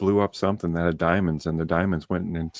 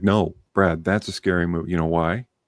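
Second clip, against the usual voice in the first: mock deadly serious voice. Retelling what dad said after the movie: imitating dad, dead serious. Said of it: "My dad looked at me dead serious".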